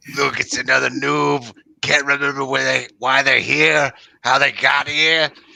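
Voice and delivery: put-on poor Scottish or British accent. Game player voicing a character greeting a newcomer, in a bad scottish or british accent. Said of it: "Why does everyone have bad Scottish and British accents?".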